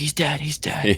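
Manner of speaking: high, loud yelling into a microphone. Retelling Fletcher yelling into the mic over Omega: imitating Fletcher yelling. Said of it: "yelling into the mic".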